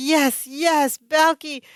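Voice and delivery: put-on ecstatic cheering. Retelling a TV scene where the team wins, imitating Larry, ecstatic. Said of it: "Larry, of course, is ecstatic".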